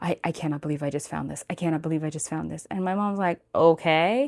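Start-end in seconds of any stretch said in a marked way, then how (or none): 0.0-2.6 quick, rushed, hushed half-whisper under the breath. Retelling a phone call to mom from Goodwill about a find: half-whispering. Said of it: "I'm like like whispering to her saying".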